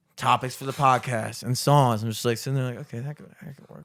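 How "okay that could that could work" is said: very soft mumbling, as if to himself. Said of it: "repeat it to myself".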